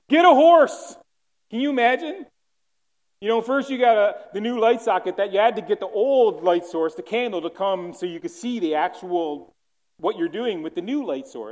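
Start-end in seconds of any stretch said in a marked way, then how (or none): 0.1-0.9 very high, very loud, shrill, booming jeering shout. Speaker telling how people shouted at passengers in cars, retelling a shout. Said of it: "shout out".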